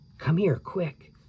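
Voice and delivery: whispery, high-pitched half-whispered calling voice. Annie calls Jack over while he draws a tree: whispery voice. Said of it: "Annie called in a whispery voice".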